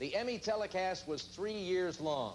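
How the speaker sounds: ordinary delivery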